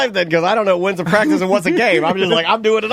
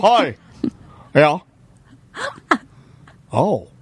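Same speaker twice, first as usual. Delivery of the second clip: flat, unemotional put-on phone voice. Imitating Tom hearing on the phone that his wife is pregnant: Tom impression, unemotional. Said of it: "I can do a perfect im-, impression of finding out when Tom found out".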